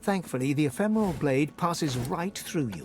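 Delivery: ordinary delivery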